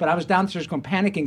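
ordinary talk, nothing marked

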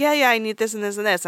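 ordinary talk, nothing marked

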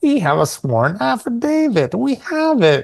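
very whiny, complaining, high, swooping voice. Quoting a film line in a whiny voice. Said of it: "Very whiny".

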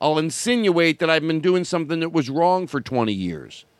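ordinary talk, nothing marked

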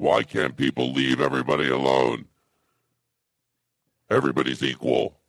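very deep, very low, dropped-down put-on voice. Showing how the same words would come across, said in a deeper voice. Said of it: "even with a deeper voice".

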